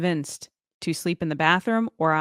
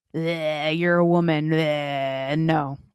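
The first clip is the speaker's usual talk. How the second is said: very slow drawl, each bleh drawn out; 2 semitones lower than usual. Imagining Jabba refusing to be convinced: Jabba the Hutt voice. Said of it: "Jabba would just be like".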